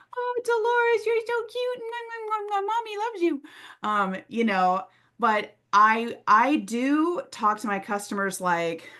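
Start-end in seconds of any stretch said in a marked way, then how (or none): 0.2-3.5 put-on very high doting baby talk. Showing how not to talk to customers: talking to a pet. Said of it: "like you talk to animals".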